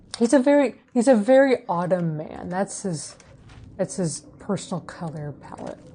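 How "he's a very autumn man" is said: plain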